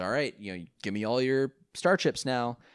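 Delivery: ordinary talk, nothing marked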